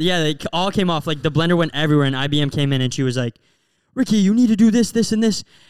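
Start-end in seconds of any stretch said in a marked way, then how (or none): 4.0-5.4 high, loud, angry barked delivery. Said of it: "she got mad at him".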